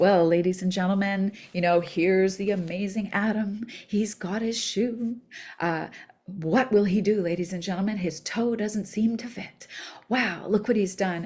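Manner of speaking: playful, mock sports-style announcer narration. Retelling a grandfather pretending to narrate a child putting shoes on: imitating a playful announcer narrating. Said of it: "pretending to narrate my son putting his shoe on".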